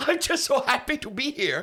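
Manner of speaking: psychopathic, manic giggle running through the words. Character looks at another character and speaks, giggling like a psychopath. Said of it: "Sven is just like giggling like a psychopath".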